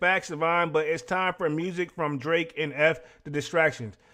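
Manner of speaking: usual speaking voice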